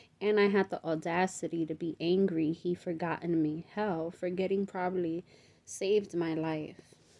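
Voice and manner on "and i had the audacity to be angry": ordinary delivery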